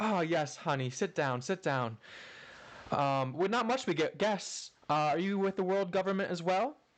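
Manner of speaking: welcoming tea lady voice. Voicing a woman who pushes a tea cart and greets the guests: voicing a tea-cart woman character. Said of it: "this woman comes up pushing a tea cart, and she's like".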